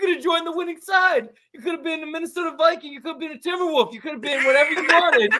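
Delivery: acted, very high-pitched yelling rant. Retelling a fight scene, yelling at the other character: retelling a yelled line. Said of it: "I'm yelling at him".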